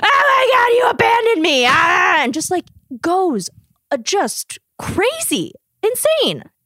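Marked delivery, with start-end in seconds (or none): 0.0-1.6 put-on man's scream, much higher, faster. Retelling how a man screamed at a woman during their call, retelling a man screaming. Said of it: "he's just screaming at her being like".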